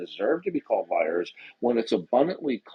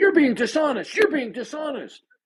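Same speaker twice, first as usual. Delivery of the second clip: mock screeching, shrill, loud, very high, repeated; 5 dB louder than usual. Imagining opponents' reaction to being lied to: imitating opponents screaming. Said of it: "they would be screaming".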